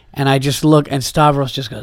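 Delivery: normal talking voice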